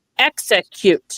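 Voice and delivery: put-on slowed word, split into syllables. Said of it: "slowed down into parts like that".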